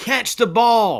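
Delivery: shrill, high, loud coach-style yell. Retelling what a coach says at practice: imitating a coach yelling. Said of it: "a coach yells".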